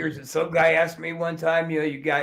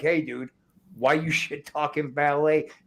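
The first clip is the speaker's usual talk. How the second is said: put-on heated, angry man voice. Retelling how a guy confronted them in a parking lot: imitating a heated guy. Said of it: "this dude was heated".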